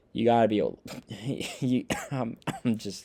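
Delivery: stumbling, swooping speech choking with laughter. Criticizing a team's running game, choking with laughter. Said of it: "I'm choking because I'm laughing".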